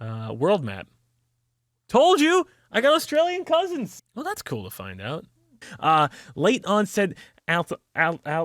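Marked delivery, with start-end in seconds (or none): 6.3-8.5 stuttering over a word, much slower. Speaker struggles to pronounce a medical term, stuttering over a word. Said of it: "I feel like Porky the Pig".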